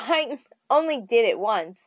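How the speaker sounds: plain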